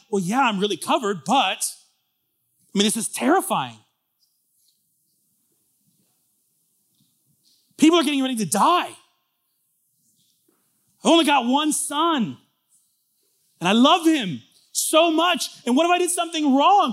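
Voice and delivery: acted, very high, rising, fearful fretting. Retelling a Passover story, the speaker voices the other man, imitating a scared man. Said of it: "And he's really scared".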